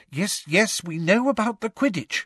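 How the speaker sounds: strained, tense, very high-pitched voice. Reading a character's reply to the group in a story, in a tense voice. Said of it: "said Hermione in a tense voice".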